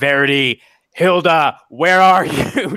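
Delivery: booming, loud call at full lung. A character calls out for two missing people, booming shout. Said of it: "she's just going to boom out".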